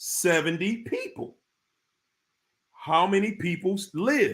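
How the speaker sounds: spoken slowly, at a slow pace. Repeating a riddle for the audience as promised, the speaker says it slowly. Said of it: "I'm going to say it slow".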